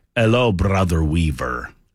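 put-on Russian accent. Imagining the russian overlords phoning a newscaster about his broadcast, mock russian accent. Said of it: "That's the best Russian I got".

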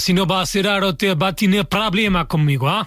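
put-on Syrian accent. Retell what you used to say to a man while acting Syrian, in a put-on Syrian accent. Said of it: "me ponía como una cosa así, siria".

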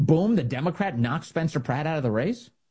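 normal talking voice

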